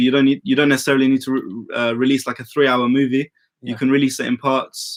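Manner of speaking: plain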